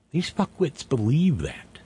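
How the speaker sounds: believe leaned on hard, stressed. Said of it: "Emphasis on the word believe".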